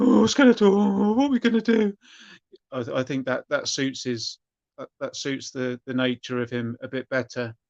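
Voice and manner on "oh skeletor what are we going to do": raised, high-pitched, bumbling, nervous voice. Showing own version of the character Whiplash: bungling nervous Whiplash voice. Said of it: "if he's sort of bungling and".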